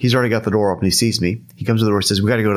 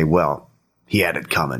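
put-on gruff, roughened voice, low and slow; 6 semitones lower, 3 dB quieter than usual. Retelling a friend's straight-faced reply at conventions: imitating Roger's gruff voice. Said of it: "He'd kind of gruff up his voice a little bit".

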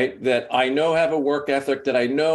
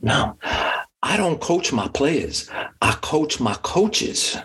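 put-on southern drawl; 2 semitones higher than usual. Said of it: "he's got this, like, Southern drawl".

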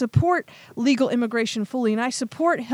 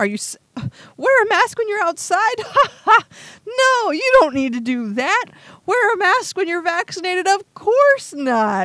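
put-on voice, speaking while laughing; 8 semitones higher, 3 dB louder than usual. Ranting about the news, acting out Fauci's answers: imitating Fauci laughing. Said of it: "laughing like".

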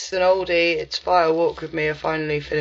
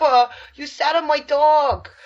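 put-on New Jersey accent, higher; 10 semitones higher, 3 dB louder than usual. Pretending to be Christopher Moltisanti's girlfriend, wandering the house: imitating Christopher Moltisanti's girlfriend. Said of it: "I like the way she says".

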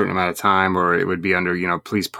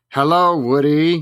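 put-on strong New York accent, higher pitch; 8 semitones higher, 4 dB louder than usual. Recalling an uncle's phone calls, imitating Uncle Jim's New York accent. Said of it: "He was like a super like New York type".

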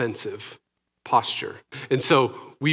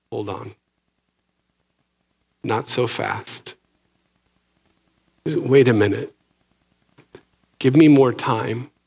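quiet, soft-spoken voice; 3 dB louder than usual. Retelling a parable and quoting its words: quiet voice. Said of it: "In a quiet voice".

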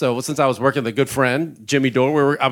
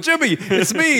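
mock high-pitched yell, calling out; 11 semitones higher than usual. Retelling calling out to Jimmy from the crowd: imitating own past yell. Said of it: "I had to yell out".

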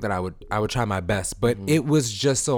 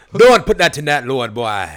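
put-on Jamaican accent, much louder; 4 semitones higher, 10 dB louder than usual. Retelling how a lady scolded you about the laundry, say this imitating a Jamaican accent. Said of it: "oh wrong accent".

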